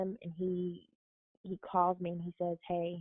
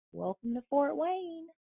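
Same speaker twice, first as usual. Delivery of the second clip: put-on small, high voice with Midwestern accent; 8 semitones higher than usual. Retelling arriving in Fort Wayne, the speaker quotes a cookie lady in her little Midwestern accent. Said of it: "in her little Midwestern accent".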